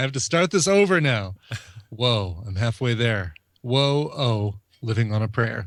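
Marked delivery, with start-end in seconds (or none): 1.9-5.7 flat, level, completely unvaried monotone. Host reading out a listener's message the way she asked: monotone. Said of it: "Abby wanted that written or read in monotone".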